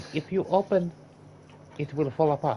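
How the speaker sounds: put-on Chinese accent over English, high and loud. Joking about a Chinese knockoff rifle: mock Chinese accent. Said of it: "we did the accents".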